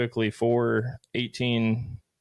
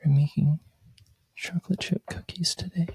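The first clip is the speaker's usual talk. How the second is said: pitched-up influencer narration voice; 6 semitones higher than usual. Describing people on Instagram who talk quietly, imitating a quiet talker. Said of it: "they talk the whole time like this".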